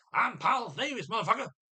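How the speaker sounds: very high, crude, dim-witted caricature voice. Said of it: "It was a caricature of [name]".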